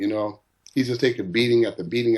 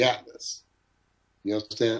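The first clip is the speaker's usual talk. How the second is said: plain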